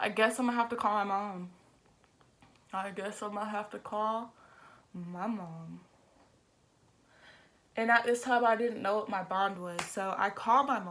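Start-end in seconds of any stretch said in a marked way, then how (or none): 0.0-5.8 bawling, sobbing through the words. Retelling calling from jail while bawling: imitating own crying. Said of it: "I just start fucking breaking down crying".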